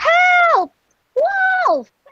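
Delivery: very high shout, first word "help" stretched. A girl flees the cottage after finding a wolf in the bed, shouting.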